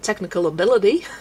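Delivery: put-on Australian accent. Trying out a gateway phrase for an australian accent, australian accent. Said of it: "my gateway phrase into the Australian accent is technical".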